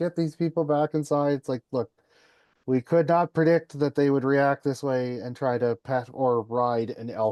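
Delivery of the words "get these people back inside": put-on high-pitched, mild yell. Retelling park staff yelling at helpers: imitating staff yelling. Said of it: "Parks Canada's yelling at us".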